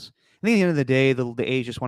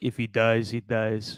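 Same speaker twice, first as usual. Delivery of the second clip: very slow, deliberate, every word drawn out; 4 dB quieter than usual. Quoting a basketball player who sounded like a boxing villain: Drago voice. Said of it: "he definitely sounded like Drago".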